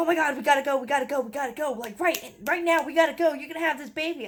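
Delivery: mock frantic panic, high, rushed, freaking out. Retelling how her husband reacted when her waters broke: imitating a panicked husband. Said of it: "And he's freaking out".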